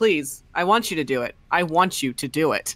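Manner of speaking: acted weary, exasperated begging, patience all gone. Imitating a character in every combat session, begging: exasperated plea. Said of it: "the most, like, exasperated".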